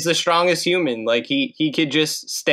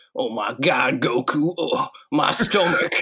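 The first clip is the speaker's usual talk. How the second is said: put-on cartoon wrestler voice; 2 semitones lower than usual. Doing a Hercule impression for friends: Hercule impression. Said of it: "this is my Hercule impression".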